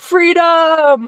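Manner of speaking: put-on rallying battle cry shout. Joking about painting a face blue at a convention: Braveheart battle cry. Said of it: "I think of, like, Braveheart".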